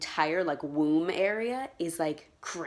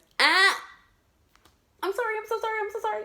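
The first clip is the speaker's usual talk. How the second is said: imitated pained yelp, higher and louder; 4 dB louder than usual. Retelling a sudden sharp pain during a procedure: imitating a pained cry. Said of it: "I went like this".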